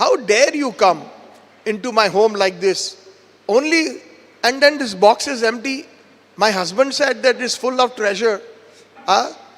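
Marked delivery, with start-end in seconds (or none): none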